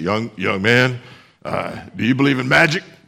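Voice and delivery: put-on gruff coach voice. Retelling a coach addressing a young quarterback, in a gruff Coach Howard voice. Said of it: "and he had a gruff voice".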